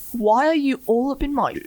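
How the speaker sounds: put-on a little British accent. Imagine the actor confronting you over the camera in his face, in Tom Holland's little British voice. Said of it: "with his little British voice goes".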